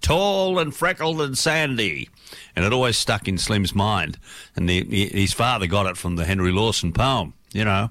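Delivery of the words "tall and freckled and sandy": high, slow mock yell. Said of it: "would yell out".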